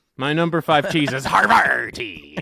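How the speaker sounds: said like a pirate. Naming a favorite cheese on a ranked list, saying it like a pirate. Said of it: "I like to say it like a pirate".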